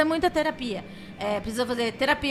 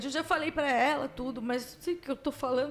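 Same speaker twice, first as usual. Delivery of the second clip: soft, tearful voice, crying while talking; 7 dB quieter than usual. Speaking on a show, unable to hold back, crying while talking. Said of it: "tô chorando".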